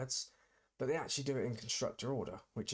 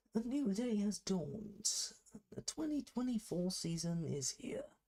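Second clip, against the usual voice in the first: stock broadcaster commentator voice, pitched way up; 9 semitones higher than usual. Starting the first practice session, in a generic commentator voice. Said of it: "This is my generic commentator voice".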